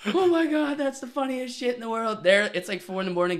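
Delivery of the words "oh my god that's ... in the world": put-on howling cry-laughing, much higher pitch. Retelling how his drunk rugby teammates reacted to him, imitating cry-laughing friends. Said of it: "they're like cry laughing, like howling at me".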